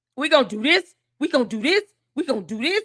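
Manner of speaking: same phrase said over and over. Mocking the random things he comes up with: imitating someone listing plans. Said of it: "all these random things he comes up with".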